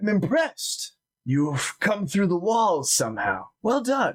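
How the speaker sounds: surprised yet impressed character voice. Voicing a character meeting travelers who came through the walls, surprised but impressed. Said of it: "surprised, but at the same time, like, impressed".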